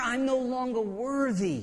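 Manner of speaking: mock broken, pained despair, very slow and drawn out. Voicing a son who has come to understand his dad's goodness, acting out pained despair. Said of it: "You hear the pain in his voice".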